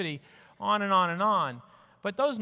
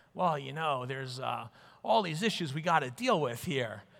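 fake New York accent, laid on thick, low; 6 semitones lower, 3 dB quieter than usual. Mimicking hospitals petitioning to expand, in a put-on new york accent. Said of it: "They don't actually say it with that New York accent, but it's all I got".

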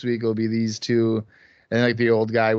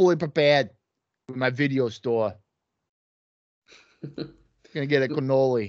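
put-on Brooklyn accent; 4 semitones higher than usual. Repeating another speaker's line back at him, teasing, in a brooklyn accent. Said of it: "like a Brooklyn accent".

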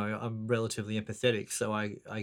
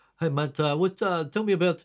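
put-on Greek accent, higher, slower; 7 semitones higher, 5 dB louder than usual. Describing a prank-call character, the speaker quotes him in a Greek-sounding voice. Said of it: "a Greek kind of sounding, you know, takeoff voice".

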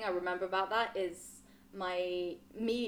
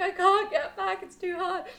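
put-on bawling and crying at a very high pitch; 12 semitones higher, 8 dB louder than usual. Recalling failing to paddle back to the boat, imitating own bawling. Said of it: "like bawling".

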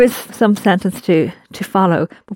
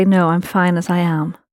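ordinary talk, nothing marked

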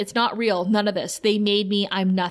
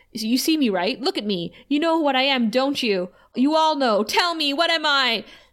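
pressing, confrontational, urgent, insistent tone; 4 semitones higher than usual. Retelling a scene where Dawn questions one of the victims: imitating someone shouting. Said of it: "Dawn starts, like, shouting at one".

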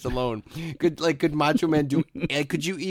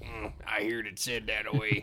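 fully unhinged, insane movie character voice; 5 semitones lower, 8 dB quieter than usual. Retelling doing a voice while washing dishes: Billy Bob Thornton voice. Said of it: "insane Billy Bob Thornton thing".

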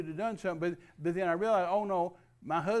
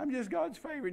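mocking put-on voice, higher pitched and quieter; 8 semitones higher, 4 dB quieter than usual. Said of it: "goofy garbage that America's gotten into".

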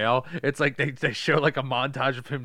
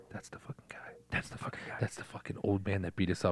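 put-on whisper, lower and quieter; 6 semitones lower, 11 dB quieter than usual. Acting out people at a dojo pointing someone out: imitating a whisper. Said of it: "whispering to the dude's ear".

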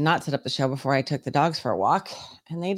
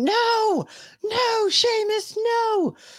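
put-on shrill, very high, long-drawn-out screaming. Retelling screaming at the dogs not to chase the raccoon: retelling a scream. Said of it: "I'm screaming".

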